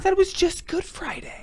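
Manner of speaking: whispered aside in a put-on impression voice. Interjecting during a reading about Friday penance days: Jim Gaffigan impression. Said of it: "That was my Jim Gaffigan impression".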